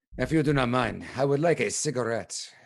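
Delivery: really terrible French. Asking a woman on the street for a cigarette in really terrible French. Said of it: "In my really terrible French".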